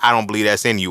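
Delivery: ordinary delivery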